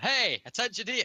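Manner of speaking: high, screaming shout. Playing a character getting the attention of two others: screaming at them. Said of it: "I scream at them".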